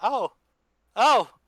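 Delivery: "oh" with pitch climbing up and up. A player describes their character's voice changing mid-transformation: voice rising higher. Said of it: "And your voice gets higher".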